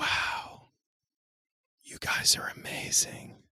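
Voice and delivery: awed, stunned, breathy whisper of disbelief. Retelling a customer's reply after her refund was processed: retelling a disbelieving whisper. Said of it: "Literally whispered like she couldn't believe".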